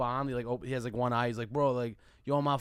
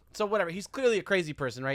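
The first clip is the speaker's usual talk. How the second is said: usual speaking voice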